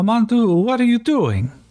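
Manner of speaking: put-on labored, terrible Quebec accent, pitched way up. Narrating a story, a character calls out to Mandu in a bad Quebecois French accent. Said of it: "let's see how terrible I can do a Quebecian French accent".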